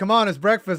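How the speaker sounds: play-acted loud hollering. Picturing LeBron waking a teammate at eight AM: imitating LeBron yelling. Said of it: "LeBron just yelling at them to wake up".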